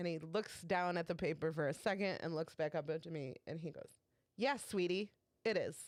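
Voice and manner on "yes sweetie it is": really awful, nasty tone of voice. Retelling a customer's reply about the email: imitating an awful tone. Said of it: "his tone is just fucking awful".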